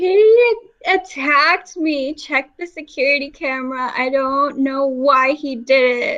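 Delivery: loud, put-on sobbing through the words. Telling how they would react when people rush over after dropping someone: fake crying. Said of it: "fake crying, and say".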